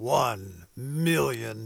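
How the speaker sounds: deep movie-trailer announcer voice. Host announcing a donor challenge to listeners, in movie announcer voice. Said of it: "hard not to say that in movie announcer voice".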